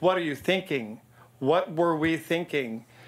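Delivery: impassioned, passionate delivery. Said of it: "he says it really loud and pat".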